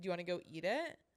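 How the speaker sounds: snippy delivery with attitude. Retelling a lady's reply as she held up the yogurt: imitating someone giving attitude. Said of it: "okay, attitude".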